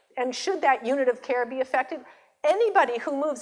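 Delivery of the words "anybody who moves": plain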